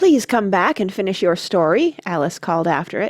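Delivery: plain reading voice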